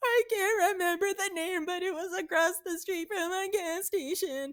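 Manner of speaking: tearful crying speech. Retelling talking to a phone agent about a funeral; imitating crying while talking. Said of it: "I immediately started crying".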